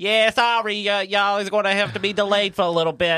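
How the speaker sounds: put-on rough, harsh, loud, high-pitched Boston accent. Retelling a delay announcement on an airline intercom, harsh boston accent. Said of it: "it's kind of like a really harsh accent".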